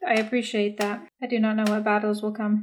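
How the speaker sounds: dead-level, unvaried flat monotone. A player speaks in character to another character during a game, in a monotone. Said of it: "That was so monotone".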